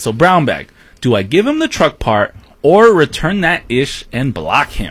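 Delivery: ordinary delivery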